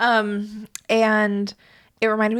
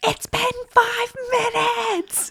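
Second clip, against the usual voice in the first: mock very shrill, very slow top-of-lungs scream; 13 semitones higher than usual. Retelling an angry drive-thru customer's complaint, imitating someone screaming at top of lungs. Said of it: "Just screaming at the top of his lungs".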